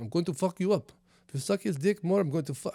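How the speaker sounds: put-on Nigerian accent, menacing and threatening. Acting out what the other Nigerian brother said, in a put-on Nigerian accent. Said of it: "I don't know if that's actually their fucking accent".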